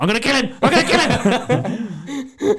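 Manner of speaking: furious, high, loud voice with laughter. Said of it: "I was like".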